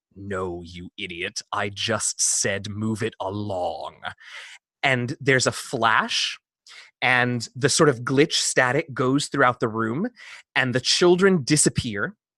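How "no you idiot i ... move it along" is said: strange, deep, slow, hushed voice. The storyteller voices a voice from nowhere addressing the players, in a deep unfamiliar voice. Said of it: "sort of this deep voice that none of you have ever heard before".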